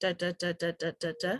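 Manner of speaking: low, level, unstressed string of da's. Teaching word stress, the speaker demonstrates unstressed syllables: low, even rhythm. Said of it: "low and in this pitch range".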